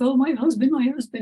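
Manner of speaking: acted high, tearful crying through the words. Retelling calling for help after a husband's fall: retelling own crying. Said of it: "I'm crying with".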